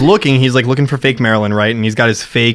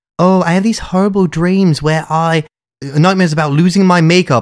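put-on Australian accent, pitched up; 5 semitones higher than usual. Quoting what a woman said about her dreams, in an Australian accent. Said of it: "was that an Australian accent?".

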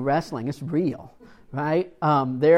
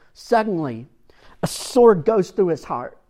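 ordinary talk, nothing marked

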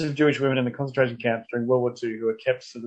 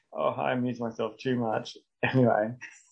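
usual speaking voice

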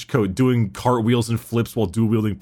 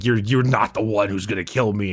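put-on angry character voice; 2 semitones lower than usual. Speaker recounts a fight scene, acting out Kurz's line: mock-angry Kurz voice. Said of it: "Kurz was all angry".

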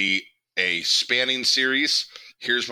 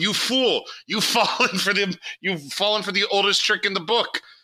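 gloating, mocking jeer, high, slow and laughing; 9 semitones higher than usual. Imagining the mods laughing at the writers, laughing, mocking like the Sicilian. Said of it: "laughing like the fucking Sicilian from The Princess Bride going".

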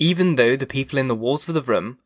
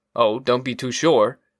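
plain

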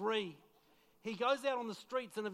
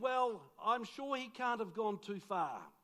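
mock breezy, unbothered, annoyingly relaxed calm. Retelling a security man's reply about a lost son: imitating an annoyingly relaxed guard. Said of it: "he was annoyingly relaxed".

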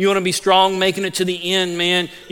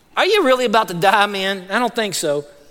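ordinary talk

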